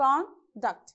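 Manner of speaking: conduct as a noun, stress on con-. Teaching conduct used as a noun: stress on first syllable CON. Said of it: "If it is a noun, we have to stress on the first syllable".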